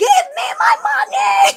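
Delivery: furious, very high, very loud, shrill angry shout. Recounting going to the lake to demand payment from the agent, retelling a shout. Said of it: "but don't shout".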